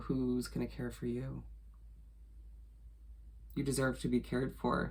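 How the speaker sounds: soft, choked-up voice catching with emotion. Giving a reading for Sagittariuses, the speaker gets choked up. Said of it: "Excuse me, as I get choked up".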